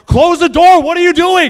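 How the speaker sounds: very loud, high, shrill, exasperated yell. Retelling what he said to his wife in frustration, retelling a loud yell. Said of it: "I very loudly said to my wife".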